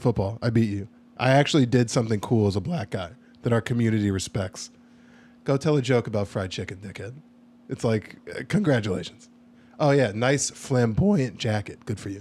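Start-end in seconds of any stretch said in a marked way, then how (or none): 9.8-12.2 voice breaks partway through the word flamboyant. Mocking a flamboyant jacket while bragging: voice cracking while bragging. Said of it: "have your voice crack on flamboyant".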